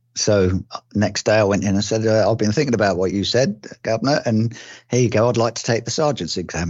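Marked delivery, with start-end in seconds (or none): none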